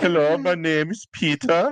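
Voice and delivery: put-on high-pitched, Swedish-accented head chef voice. Retelling how the Swedish head chef introduced himself: imitating Peter.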